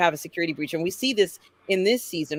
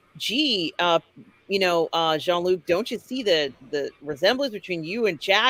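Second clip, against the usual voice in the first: ordinary talk, nothing marked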